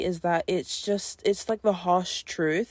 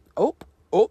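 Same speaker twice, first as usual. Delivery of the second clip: thick, strong northern English accent, raised voice; 7 dB louder than usual. Repeating a word mid-sentence, slipping into a strong northern accent. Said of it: "that was such a northern accent".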